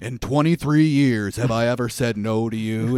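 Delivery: big, impressive radio-announcer voice and delivery. Quoting the banker from a movie being recapped: imitating an unbelievable radio voice. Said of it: "It's like an unbelievable radio voice".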